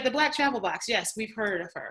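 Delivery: normal talking voice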